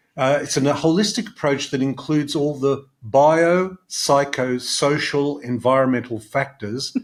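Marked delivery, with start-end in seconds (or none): 3.0-7.0 very slow, each word said separately. Introducing a word they love in a talk: said very slowly. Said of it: "I'm going to say very slowly".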